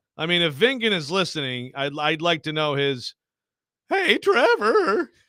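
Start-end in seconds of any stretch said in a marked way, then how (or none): 3.9-5.1 put-on very high-pitched voice like a teen kid. Doing the intended voice for a listener: Simpsons teenager kid voice. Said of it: "I'm going for the Simpsons teenager kid".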